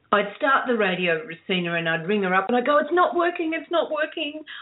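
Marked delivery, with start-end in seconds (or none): 2.8-4.4 high, panicked, rattled off fast. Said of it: "I'd be in an absolute panic".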